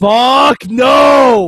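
high, loud, full-throated scream, drawn-out "no". Retelling what a woman screamed into the mic the ref held up, retelling a scream. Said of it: "Sexy Star just screams".

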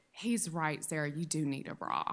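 very quiet, low and soft.

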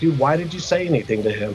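ordinary talk

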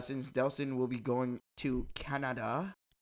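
clumsy, failed attempt at a put-on French accent. Announcing a trip to canada in an attempted french accent. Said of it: "I tried to use a French accent".

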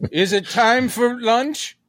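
put-on high-pitched little old lady's voice. Recalling a comedy routine, the speaker does an old lady voice. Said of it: "He would just do this amazing old lady voice".

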